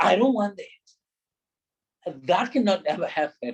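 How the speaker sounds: confrontational, aggressive, hard tone. Speaker demonstrating how an aggressive person sounds, aggressive tone. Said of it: "that kind of a tone uh, will depict that a person is aggressive".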